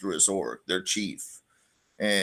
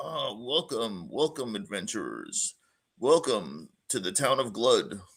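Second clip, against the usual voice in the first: put-on welcoming elderly man voice; 4 dB quieter than usual. Storyteller voicing the town's mayor addressing the adventurers: Mayor Everhart character voice. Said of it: "It's just an old fat guy".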